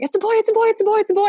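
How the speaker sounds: put-on joyful, excited shout, pitched very high. Speaker retelling their husband shouting at their baby's birth: retelling an excited shout. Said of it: "I just remember him shouting".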